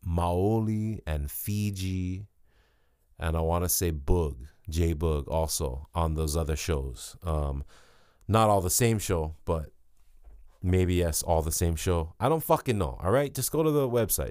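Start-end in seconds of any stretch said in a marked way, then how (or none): 12.2-14.3 exasperated, high, swinging frustrated yell. Listing show lineups, unsure who plays which show: yelling in frustration. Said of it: "I'm sorry I yelled".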